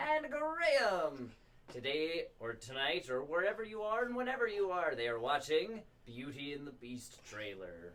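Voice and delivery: sing-song fifties game-show host patter. Host introduces a trailer-reaction episode, old game-show announcer voice. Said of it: "that's [name]'s announcer voice".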